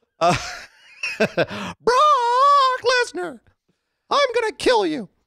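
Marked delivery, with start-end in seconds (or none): 1.8-5.1 very high-pitched put-on voice with a crying sound. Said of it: "Give him Paul Heyman".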